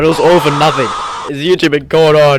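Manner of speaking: loud, high-pitched, dramatic, ominous delivery.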